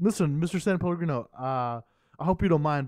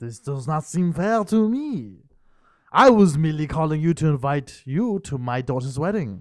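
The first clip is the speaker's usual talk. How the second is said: loud put-on French accent on every word; 5 dB louder than usual. Speaking to Mr. San Pellegrino in a bit: put-on accent. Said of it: "your accent".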